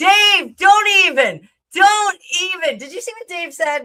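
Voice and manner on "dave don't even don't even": booming, playful, teasing yell, loud and drawn out. Telling a viewer to stop after his comment: playful yelling. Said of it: "why I'm yelling at Dave".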